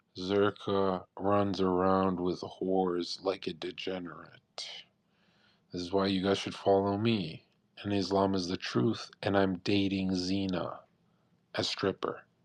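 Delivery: low, slow, unblinking straight-faced deadpan delivery. Imitating Sneako speaking to the camera: deadpan Sneako impression. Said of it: "he'll look deadpan at the camera and say".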